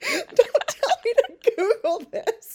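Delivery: high, loud, laughing, indignant voice.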